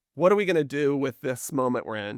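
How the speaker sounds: normal talking voice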